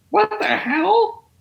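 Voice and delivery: very high, creaky, crackling voice. Showing the others a David Lynch impression. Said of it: "That's my David Lynch impression".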